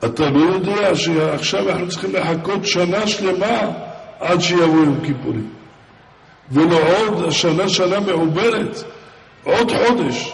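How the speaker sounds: mock startled, astonished, rebuking cry of disbelief. Recounting what a great man said after Yom Kippur passed, retelling an astonished outcry. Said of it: "אז הוא מיד נזעק".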